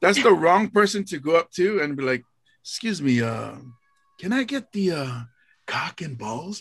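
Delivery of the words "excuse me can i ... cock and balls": hushed secretive manner. Retelling ordering a donut from the cashier: retelling own secretive request. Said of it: "I was being real secretive for no reason".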